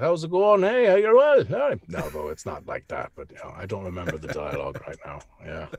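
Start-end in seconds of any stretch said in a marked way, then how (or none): 0.0-1.4 put-on Irish accent, shrill, high and loud. Asked to give the voice of a game role, showing an Irish accent. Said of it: "It's just an Irish accent".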